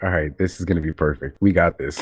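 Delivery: ordinary delivery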